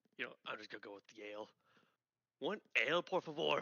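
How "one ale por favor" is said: bad, slow, awful fake Scottish accent. Playing Cass, the first to arrive at the bar: worst Scottish accent. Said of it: "in the worst Scottish accent".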